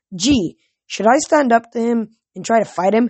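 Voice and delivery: ordinary talk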